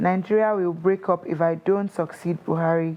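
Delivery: ordinary talk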